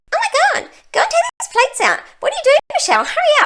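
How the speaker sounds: very high, swooping, silly voice. The speaker gives a silly voice to a sparkly tapeworm named Charlie: silly Charlie tapeworm voice. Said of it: "I'm going to give him a silly voice".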